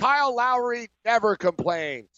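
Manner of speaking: heavy sarcasm, very slow, swooping. Responding to another speaker's point about complaining: sarcastic. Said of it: "I'm being sarcastic".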